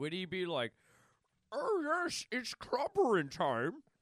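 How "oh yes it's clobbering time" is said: high character voice swinging pitch up and wide. Guessing aloud how a hybrid comic character would sound: Thing-Bane hybrid voice. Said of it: "What would he sound like?".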